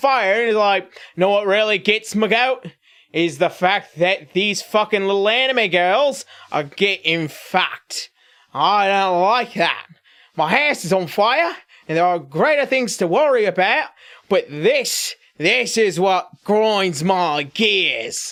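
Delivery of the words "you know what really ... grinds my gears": terrible put-on Australian accent, clumsy, ranting. Acting out a man whose house is on fire: terrible australian accent. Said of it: "That's a terrible Australian accent".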